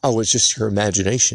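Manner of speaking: ordinary delivery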